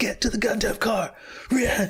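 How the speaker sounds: put-on high yelling.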